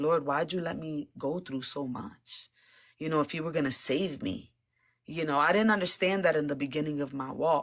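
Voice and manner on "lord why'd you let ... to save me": put-on crying voice, tearful and weepy. Retelling a prayer from coming to faith, imitating own past crying. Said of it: "I was crying like".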